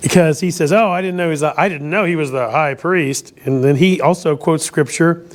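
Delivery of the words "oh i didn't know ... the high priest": ordinary talk, nothing marked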